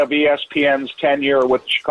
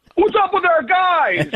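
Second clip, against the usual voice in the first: put-on loud hollering voice, very high-pitched. Retelling how a vegetable worker greets him from far away: imitating a loud greeting. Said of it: "greet me in a loud voice from maybe thirty feet away".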